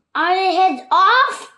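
shrill, very loud, high bellowing shout. Reading the queen's line in the story, shouted from behind Alice. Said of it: "the queen shouted behind her".

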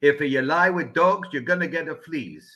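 put-on thick laid-on Italian accent. Quoting a mentor's grandfather's saying: thick Italian accent. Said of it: "in a very thick Italian accent said".

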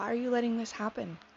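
usual speaking voice

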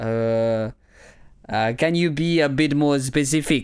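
put-on French accent. Acting out an awkward workplace scene as a professor: French accent. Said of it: "I'm going to be a French professor".

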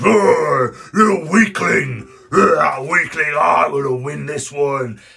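slow, gruff, brutish, boasting, taunting frost giant voice. A giant taunting its opponent while boasting of winning the contest; deep brutish giant voice. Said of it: "You see two frost giants arm wrestling in this huge chamber. / They're huge muscles, as large as barrels, like double barrels, huge oaken barrels. Their arms are strained against them as they fight ea".

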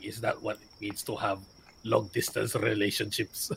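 soft hushed in-character whisper. Voicing a character who leans over to Grog, whispering in character. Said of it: "I'm whispering it to Grog".

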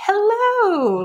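very high, drawn-out, peppy put-on voice. Describing peppy game villagers obsessed with fame: imitating a peppy villager. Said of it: "They're very like".

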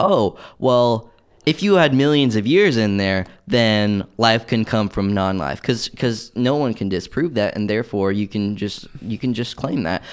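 plain

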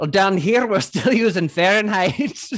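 put-on strong, loud Irish accent laid on hard. Retelling a movie character's only line, in an Irish accent. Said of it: "she comes in hard with an Irish accent".

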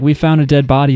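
ordinary talk

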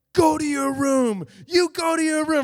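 high, loud, bossy screaming. Retelling an argument with a brother: retelling screaming at brother. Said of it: "I'm like screaming at him".

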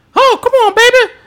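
piercing, shrill yell, very high and very loud. Retelling how Jimmy Hart reacted as Hugh Morris got beaten up, imitating Jimmy Hart yelling. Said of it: "Jimmy Hart is yelling".

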